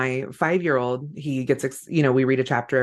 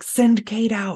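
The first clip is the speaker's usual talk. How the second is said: put-on whisper, higher; 9 semitones higher, 3 dB louder than usual. Retelling how the husband came to the door: imitating a whisper. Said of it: "He's, like, whispering".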